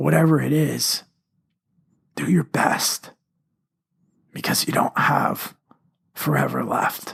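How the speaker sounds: voice nearly gone, failing. Closing a podcast episode to listeners, voice giving out. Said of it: "I apologize for the vocal quality".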